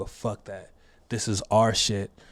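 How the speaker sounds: imitated loud speaking. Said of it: "and he said it loud".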